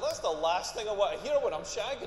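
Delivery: normal talking voice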